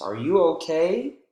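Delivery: okay with a yes-no style rising lift. Example of rising intonation in a yes-or-no question: rising on okay. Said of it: "Rising intonation, right? When we ask yes or no questions".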